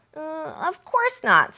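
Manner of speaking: squeaky, nervous, slow voice. Reading a story aloud, a nervous boy denies being afraid: squeaky nervous voice. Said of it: "Sam said in a squeaky voice".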